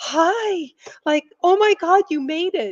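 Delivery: happy, delighted tone. Retelling walking into neighborhood stores and greeting shopkeepers, retelling a happy greeting. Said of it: "I was so happy to see the store owners".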